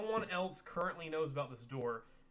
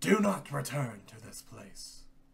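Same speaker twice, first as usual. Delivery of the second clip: grave, very faint, barely audible whisper; 3 semitones lower, 6 dB louder than usual. A game narrator voices a wraith ordering the intruders out, grave, barely audible whisper. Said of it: "in a very grave, barely audible whisper".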